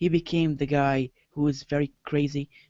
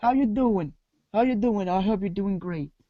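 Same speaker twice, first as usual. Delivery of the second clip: terrible put-on Brooklyn accent, pitched up; 5 semitones higher than usual. Streamer greeting the viewers who just joined: bad Brooklyn accent. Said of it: "Stop being in that Brooklyn accent".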